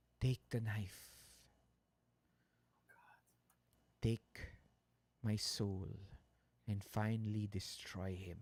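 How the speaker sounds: low whisper. Game master voicing the old woman speaking into a player's ear, in a whisper. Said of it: "You hear a voice whisper in your ear".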